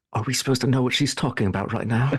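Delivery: hushed whisper. Leaning over to ask another character a question: whispering. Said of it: "whisper in her ear".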